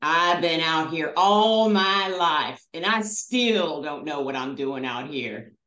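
put-on heavy, deep Southern drawl. Retelling what a trail companion told the group about his life outdoors, in a put-on deep southern accent. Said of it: "deep Southern accent".

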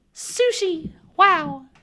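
high-pitched cartoonish mouse voice. Saying a word, then asked who talks like that: Mickey Mouse voice. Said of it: "Who do you know that talks like that?".

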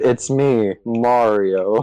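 utterly unenthusiastic, nonchalant, flat deadpan delivery. Imagining the new actor voicing Mario, mock-nonchalant Chris Pratt as Mario. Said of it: "The most nonchalant voice ever".

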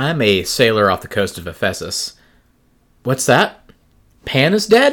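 theatrical, dramatic, swooping, drawn-out delivery. Introducing oneself in a made-up role as a sailor: dramatic role-play delivery. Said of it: "my little dramatic tur-, turns".

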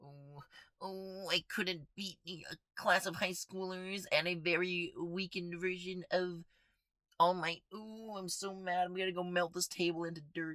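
put-on very high, sulky, whiny little-boy voice. Mocking a disliked character: mocking whiny Shigaraki voice. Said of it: "He's little whiny baby boy".

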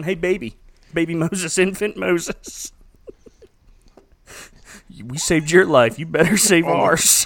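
put-on pressing, somewhat intense tone. Retelling how a woman speaks to infant moses in a film; mock-intense. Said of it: "she means a little intense there, going".

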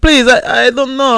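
weepy, lost, pleading tone, slow and tearful. Retelling a delivery call where a lost customer was crying: imitating a crying lost man. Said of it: "this Italian guy's crying that he's lost".

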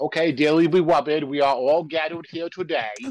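cartoonish priest voice. Retelling how the priest sounded, Elmer Fudd voice. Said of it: "That's what the priest sounded like".

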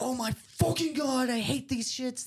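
play-acted very high-pitched raw yell, shrill rant. Speaker describing old tapes, acting out a person yelling at the camera. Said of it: "Dylan just yelling at the camera".

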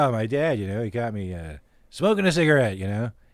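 very low, dropped-down voice. Retelling a comedian's joke about smoking: imitating Norm Macdonald telling a joke. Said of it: "Ever hear Norm Macdonald's joke about that?".

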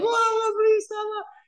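put-on very high, tearful, sobbing, pleading voice. Retelling jumping on the bed begging her for help: imitating own crying plea. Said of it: "crying, begging her to help me".

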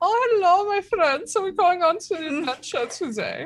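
very high-pitched voice with put-on German accent. Joking that the group will be german next campaign: put-on german accent. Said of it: "we're gonna be German".

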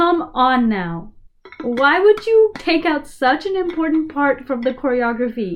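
genuinely angry, mad outburst. Complaining that the stool choreography was dropped: really mad. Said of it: "I sounded really mad there".

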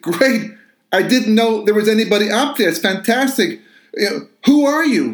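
excited, relieved delivery.

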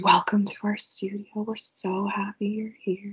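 gentle, soft, hushed, welcoming voice. Trying out the studio welcome the other speaker just described, in a soft voice. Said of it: "it's like a really soft voice".

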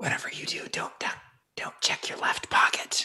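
hushed, quiet whisper. Playing a wizard walking past a guard out the door: whispering in character. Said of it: "I whisper to him".

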